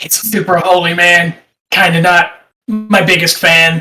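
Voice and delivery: slow, confiding stage whisper. Half-whispering to a companion in character during the game: half-whispering in character. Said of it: "whisper in Draconic to Khan".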